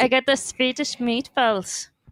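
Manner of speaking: rough, bad, fake put-on Swedish accent. Asked whether you can do a Swedish accent, trying a rough Swedish accent impression. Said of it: "That's a rough impression there".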